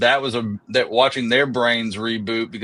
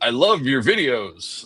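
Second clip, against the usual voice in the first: radio announcer voice, on-air DJ delivery. Retelling what Ben Ingram said when they met that night: radio voice. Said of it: "in his like radio voice".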